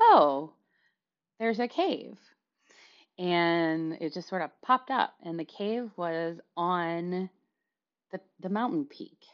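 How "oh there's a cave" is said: put-on sudden surprise, high and swooping. Retelling own words on suddenly finding a cave: imitating own surprised voice. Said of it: "you could hear the surprise in my voice".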